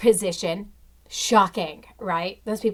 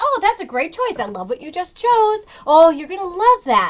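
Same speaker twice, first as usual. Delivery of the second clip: very loud, swooping, over-the-top super-happy cheerful gush; 11 semitones higher, 8 dB louder than usual. Imitating a cashier greeting customers: imitating a super happy cashier. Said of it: "super, super happy".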